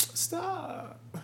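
put-on coy girly tone. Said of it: "you know how girls will say".

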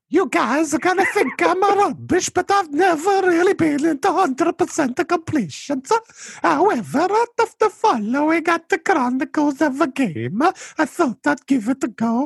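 high-pitched put-on Italian accent. Asked to do an Italian accent, the speaker tries it on an intro; Mario Italian accent. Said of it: "do an Italian accent?".

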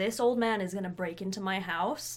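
plain

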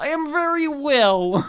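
put-on high, drawn-out Polish accent. Answering how are you in a mock interview, Lindsay Lohan with Polish accent. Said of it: "very Polish".

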